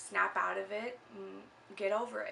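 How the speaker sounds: ordinary talk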